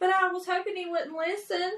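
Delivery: plaintive, full-on, high whine. Answering another speaker who points out the speaker said not to: whiny voice. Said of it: "That is the whiny voice".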